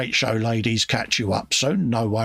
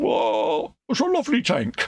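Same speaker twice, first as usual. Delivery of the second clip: bad, very slow, high swooping drawn-out voice; 5 semitones higher than usual. Admiring a big model tank: poor Oddball impression. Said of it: "that's a poor impression of Oddball".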